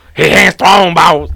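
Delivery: put-on Cajun accent. Told to talk like a Cajun, speaker repeats the quote in a Cajun accent. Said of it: "you got to talk like a Cajun now".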